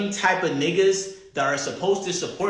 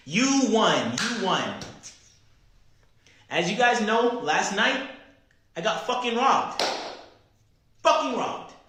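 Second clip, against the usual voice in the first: really angry sound-off, an angry outburst; 4 semitones higher than usual. Speaker telling his viewers he got robbed last night, angry. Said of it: "because I'm really angry right now".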